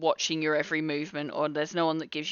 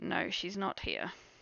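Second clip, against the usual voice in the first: muttered very quietly, higher pitched; 3 semitones higher, 8 dB quieter than usual. Voicing a character who turns to the bar and speaks: very quiet, under the breath. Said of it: "very quietly say under his breath".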